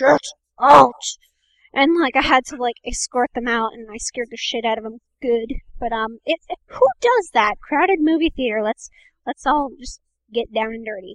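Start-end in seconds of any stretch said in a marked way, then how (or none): 0.0-0.9 very loud demon voice at full volume. Retelling escorting people out of a crowded movie theater, in a demon voice. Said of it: "I got the demon voice".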